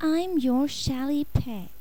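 patient, high, unhurried, slightly weary voice. A small creature introduces itself to Vinny: patient, high-pitched, a little tired. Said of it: "Its voice was patient, high-pitched, a little tired".

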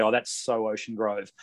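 ordinary delivery

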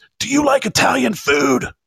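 very high, shrill, shrieking scream. Retelling how a coach confronted an umpire at second base: imitating someone screaming. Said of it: "he screamed in his face".

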